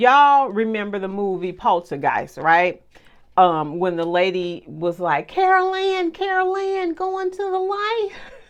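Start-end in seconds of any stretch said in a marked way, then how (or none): 5.3-8.1 tiny, very high calling voice. Speaker recalling a scene from the movie Poltergeist, Poltergeist lady's little voice. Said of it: "I remember her little voice".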